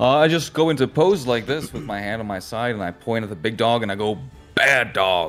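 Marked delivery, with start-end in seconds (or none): 4.5-5.3 booming, reverberating, resounding voice that echoes. A player's character points at a big dog: booming, reverberating voice. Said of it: "my voice booms, and it like reverberates".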